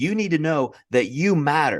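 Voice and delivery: put-on loud aggressive voice. Retelling a guy who spoke to his comedian friend: imitating a loud aggressive man. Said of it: "got really loud and aggressive and said".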